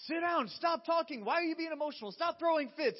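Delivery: shrill, furious, full-blast yelling. Retelling yelling at a son to stop throwing fits: imitating own angry yelling. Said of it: "I pass the elevated voice and I get to yelling".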